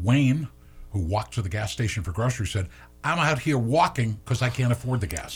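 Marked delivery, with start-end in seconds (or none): 3.0-5.4 fake, put-on New Jersey accent. Reading a news report, quoting a man who walked for groceries, in a put-on New Jersey accent. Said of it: "Is that your accent? Are you trying to be yes, New Jersey?".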